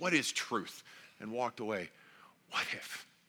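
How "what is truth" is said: scornful, dismissive, brushing-off sarcasm. Retelling how Pilate asked the question: imitating a dismissive, sarcastic question. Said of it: "Said it dismissively, sarcastically".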